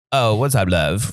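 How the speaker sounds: slow, smooth, drawn-out delivery. Praising an actor's looks, imitating his smooth voice: Idris Elba smooth voice. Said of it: "he has that smooth voice".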